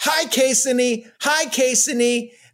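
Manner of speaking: mock little kid voice, high carrying yell. Retelling a kid calling across the street to a friend: imitating Gigi yelling. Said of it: "yells across the street to her friend".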